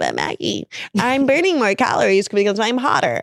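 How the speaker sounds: animated, swooping sing-song voice. Imitating viewers who object in the comments: imitating commenters. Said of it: "I can hear you in the comments being like".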